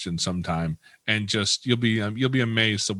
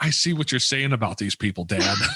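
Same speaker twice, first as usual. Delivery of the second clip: put-on, very loud stage whisper. Retelling the speaker's son turning to him in public, imitating his loud stage whisper. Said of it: "very, very loudly says".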